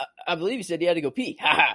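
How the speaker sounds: odd put-on weird voice, ending with a laugh. Retelling a movie scene where JFK speaks: weird JFK voice and laugh. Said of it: "this weird, like, J F K voice and laugh".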